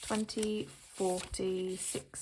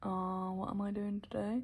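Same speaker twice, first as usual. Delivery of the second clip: puzzled, dithering, unsure, clueless musing. Imitating how own video openings sound: imitating own clueless video opening. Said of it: "I sound a bit like".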